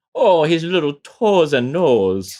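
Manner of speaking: put-on Minnesota accent. Speaker takes up a phrase teed up for it, in a Minnesota accent. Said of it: "teed up for a Minnesota accent".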